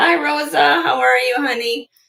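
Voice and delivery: very high under-the-weather voice. Greeting someone by name while a little under the weather, sick voice. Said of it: "I'm a little under the weather".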